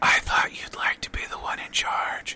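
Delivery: close, intimate whisper.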